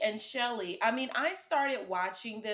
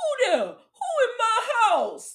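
very high, shrill, loud, bad fake Haitian accent; 13 semitones higher, 11 dB louder than usual. Mocking how a movie's gangster characters talked: imitating a fake Haitian accent from a movie. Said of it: "ain't no Haitian talking like that".

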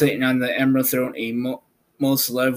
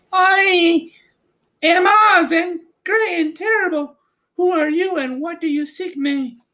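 very high, sweet lady voice with long drawn "I"; 3 dB louder than usual. Reading aloud, the ruler on the throne greets the Scarecrow, as Oz, a sweet lovely lady.

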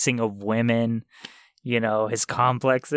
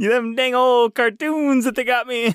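very high squeaky cartoon voice in the wrong accent; 12 semitones higher, 4 dB louder than usual. Playing the real Mario in a comedy bit, wrong-accent Mario impression. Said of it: "I'm going in the wrong accent".

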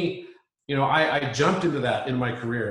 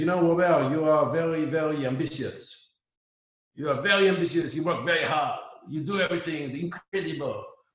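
put-on very thick French accent, laid on heavily; 3 semitones higher than usual. Quoting what a French guy once said: heavy French accent. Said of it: "And I have very, very heavy French accent".

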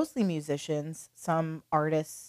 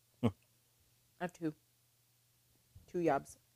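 quieter, speaking with something in mouth; 6 dB quieter than usual. Answering a friend's question mid-chat, talking with basil in your mouth. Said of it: "I have some basil in my mouth".

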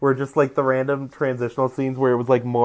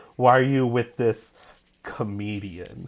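slow, put-on tone dripping with disgust. Retelling the mom's line to her son at dinner: imitating disgusted mom. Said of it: "says it with the perfect amount of disgust".

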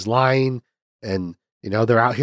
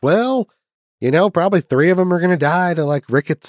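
put-on Southern American accent, pitched up; 6 semitones higher than usual. Discussing a frontier movie, voicing families with seven kids, in a Southern accent. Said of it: "I don't know why I'm giving a Southern accent".

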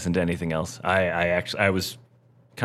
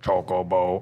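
drawn-out mechanical robot voice. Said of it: "this robotic voice just goes".

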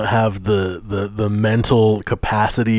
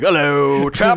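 goofy put-on British accent, raised pitch; 5 semitones higher than usual. Imagining a friend walking down an English street: imitating silly British accent. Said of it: "You think he just walks down the street like".

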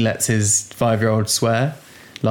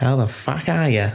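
atrocious, fake put-on Australian accent; 3 semitones higher than usual. Imagining how australian kids greet grandparents, speaker tries a bad australian accent. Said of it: "I used to have a really good Australian accent".

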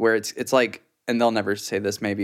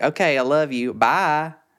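put-on high, thick accent, "bye" stretched to three syllables; 5 semitones higher than usual. The speaker mimics their mom ending a phone call; imitating mom's thick accent. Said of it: "But my mom is thick with it".

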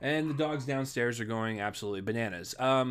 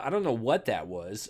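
usual speaking voice

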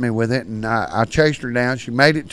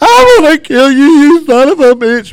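put-on very loud, very high, sobbing furious scream; 11 dB louder than usual. Retelling a sister attacking with knives, imitating her sobbing angrily. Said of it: "was sobbing".

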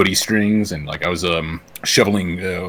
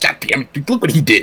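grumbling, griping tone, higher pitch; 8 semitones higher, 4 dB louder than usual. Imitating a guy on the bus reading the newspaper: grumbling newspaper reader on a bus. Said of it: "you're the guy on the bus who's, like, reading the newspaper".

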